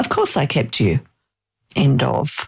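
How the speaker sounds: play-acted terse, very clipped, curt delivery with swooping pitch. Quoting her reply about keeping the speaker, imitating a clipped, curt tone. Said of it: "in a very clipped, don't want to talk about it tone of voice".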